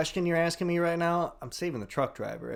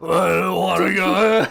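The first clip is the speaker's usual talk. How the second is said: put-on rock monster voice, higher and louder; 5 semitones higher, 10 dB louder than usual. Imitating a film character in a movie discussion: Ben's rock voice. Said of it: "His rock voice kills me".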